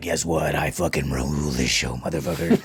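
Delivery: very deep, soft, manly boasting voice. Speaker imitates co-host Adam's voice on the show, in Adam's deep masculine voice. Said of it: "He's like deep as shit".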